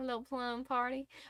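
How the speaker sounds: soft, hushed, slight put-on southern twang. Quoting an old manager's phrase: imitating old manager's southern twang. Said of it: "so you put a little twang on".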